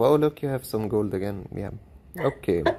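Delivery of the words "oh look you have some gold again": ordinary talk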